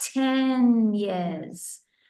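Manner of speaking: "ten" slowed and drawn out. Teaching how to say how long you lived somewhere, with stretched-out 'ten years'. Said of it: "stretch your words out".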